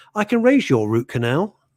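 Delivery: plain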